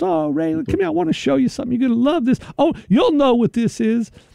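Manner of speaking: put-on thick Southern accent. Retelling what a real estate agent said to him, thick southern drawl. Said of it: "she's got this really thick southern drawl".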